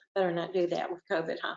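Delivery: ordinary delivery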